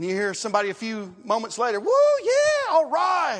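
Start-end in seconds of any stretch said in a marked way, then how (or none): 1.8-3.4 put-on very high, swooping, drawn-out excited whoops. Telling a Judgment Day story, voicing somebody ahead in line: imitating excited yelling. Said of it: "What are they so excited about?".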